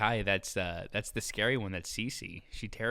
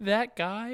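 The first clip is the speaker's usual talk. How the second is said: put-on child's upset whine, higher; 12 semitones higher, 4 dB louder than usual. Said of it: "She's, like, fake crying. She's all upset".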